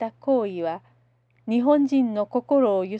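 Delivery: ordinary delivery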